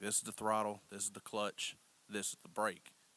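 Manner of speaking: plain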